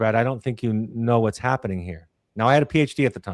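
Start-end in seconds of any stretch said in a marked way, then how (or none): 0.0-2.1 gentle, soft, imitated gentle speech. Recalling his therapist's words while he struggled to confess, quoting her gently. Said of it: "said very gently".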